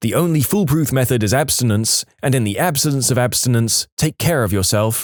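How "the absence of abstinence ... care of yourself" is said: ordinary delivery, nothing marked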